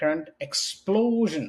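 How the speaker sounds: slow, deliberate speech.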